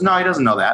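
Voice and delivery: ordinary talk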